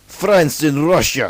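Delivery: put-on Russian-accented delivery. Listing pre-World War One alliances, saying each in an accent: Russian accent. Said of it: "That was a Russian accent".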